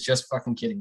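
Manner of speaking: ordinary talk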